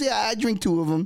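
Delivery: breezy, very casual, offhand throwaway delivery. Retelling what a friend said when handing over the drink: imitating a casual remark. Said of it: "very casually, I might add".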